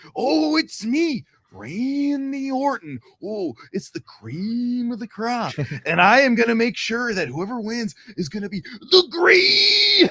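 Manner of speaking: drawn-out, high-pitched delivery. Retelling a prank call, retreating into another impression: Randy Savage impression. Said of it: "I just did, uh, Randy Savage".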